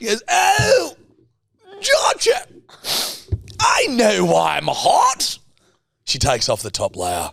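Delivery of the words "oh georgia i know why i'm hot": put-on very high, very slow, drawn-out posh British aristocrat accent. Quoting a woman in the airport boarding line, british aristocratic accent. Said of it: "Suddenly she had a very distinct British aristocratic accent".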